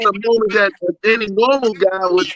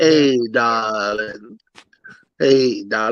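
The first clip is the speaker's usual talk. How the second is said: very deep, very slow, drawn-out voice; 10 semitones lower than usual. Imitating how she said it: imitating Maria's voice. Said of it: "That's how she said it".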